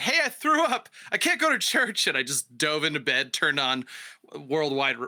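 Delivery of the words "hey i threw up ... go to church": acted-out thrilled, elated holler, pitched high. Retelling yelling downstairs to Mom after throwing up: retelling a yell to Mom. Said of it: "I yelled down to Mom".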